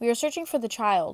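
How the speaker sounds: plain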